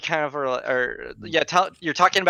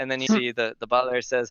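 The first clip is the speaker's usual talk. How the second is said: ordinary talk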